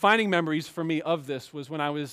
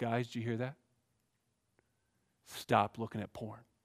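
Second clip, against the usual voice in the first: much quieter mock-serious preacher tone; 6 semitones lower, 9 dB quieter than usual. Retelling a pastor turning to the men in church: mock-serious preacher tone. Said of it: "gets real serious".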